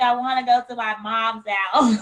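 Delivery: normal talking voice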